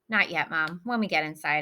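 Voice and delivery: ordinary talk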